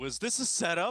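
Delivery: very loud, high-pitched yell carrying over background noise. Retelling a phone call made under gunfire in a limo, retelling a yell. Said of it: "I'm gonna be yelling at this point".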